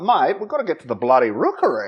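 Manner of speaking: put-on Australian accent with swooping pitch. Retelling how someone said a line, in an australian accent. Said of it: "He says it like an Australian".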